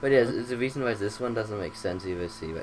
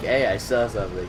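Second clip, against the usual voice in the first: plain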